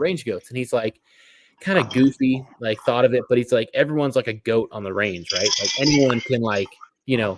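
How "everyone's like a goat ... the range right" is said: normal talking voice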